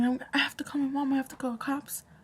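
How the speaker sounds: mock frantic, panicky outburst of a grown man. Retelling a car accident, imitating the other driver: imitating a man freaking out. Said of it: "when he started freaking out and saying".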